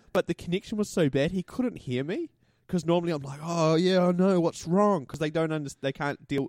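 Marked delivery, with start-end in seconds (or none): 3.4-5.0 put-on sarcastic concern, slow and drawn out. Retelling how they answer scam callers: imitating own sarcastic sympathy. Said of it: "they don't know how to deal with sarcasm".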